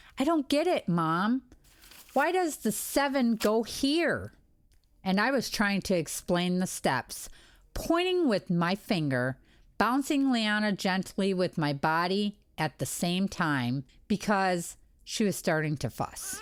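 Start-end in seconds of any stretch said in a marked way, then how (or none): 0.2-4.3 put-on fed-up, frustrated child voice, pitched up. Retelling a child's long-division complaint: imitating a frustrated child. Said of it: "She was getting so frustrated".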